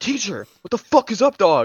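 put-on fuming, worked up, loud, angry, swooping. Retelling how a classmate got mad and went to the teacher: imitating someone angry. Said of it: "he gets so mad".

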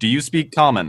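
speaking up loudly. Player's character calls out to a group staring back, loud enough to be heard. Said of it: "I say loudly enough to be heard".

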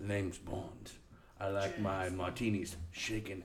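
hushed, slow, barely audible spy whisper. Answering a request from another speaker with a James Bond impression. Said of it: "Give us your best James Bond".

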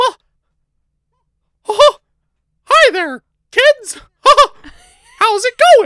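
high squeaky voice, loud and bouncy. Voice actor breaks into the voice once Mickey Mouse is mentioned, Mickey Mouse voice. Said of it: "Don't ever bring up Mickey Mouse".

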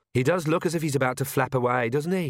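ordinary delivery

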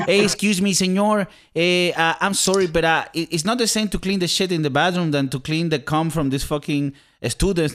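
put-on played-up Mexican accent. Quoting a janitor in a story, with a put-on Mexican accent. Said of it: "the guy is Mexican and has an accent".

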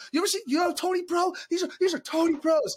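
close-up, very high-pitched, in-your-face yelling. Retelling pressing a guy with questions; retelling yelling in his face. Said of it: "Like 2 inches from his face".

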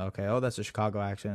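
low, soft, running mumble to oneself. Imitating own talk while watching games alone: imitating own mumbling to self. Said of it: "mumbling that type of stuff to myself".

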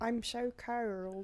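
put-on Australian accent. Mocking how Australians sound, in a mock Australian accent. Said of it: "That's what they sound like. Down under".

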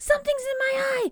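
high, loud, panicked screaming.

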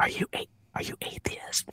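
hushed, very quiet, breathy, barely audible whisper. Retelling how a sister asked a question: imitating sister whispering. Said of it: "and she whispered it".

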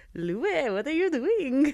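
funny put-on Indian accent. Recalling how he talked in tour video diaries, funny Indian accent impression. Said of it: "He would like talk in that funny voice".

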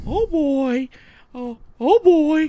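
very high, slow cartoon voice. Voicing a Mickey plush that wants to be in the podcast: Mickey Mouse voice. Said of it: "Kurt said Mickey wants to be in the podcast".

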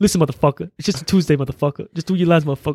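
laid-back put-on impression. Retelling an interview story, imitating Samuel L. Jackson, laid back. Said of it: "laid back".

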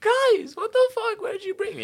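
very high, very loud shrieking scream. Retelling seeing the signs on every house in india: imitating own past scream. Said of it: "I start screaming".

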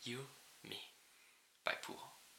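whispered, put-on Russian accent. Reading a message aloud after being told to: russian accent. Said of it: "I have to do the Russian accent".

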